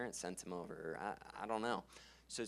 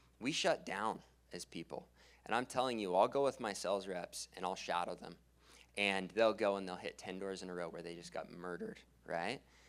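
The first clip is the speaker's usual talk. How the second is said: ordinary talk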